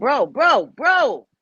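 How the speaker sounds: loud, screamed, repeated bro. Talking to viewers, the speaker yells at someone knocking over a box: screaming. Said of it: "Sorry, guys, I'm screaming".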